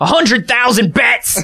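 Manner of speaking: heavy mock Australian accent. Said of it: "do Australian accents".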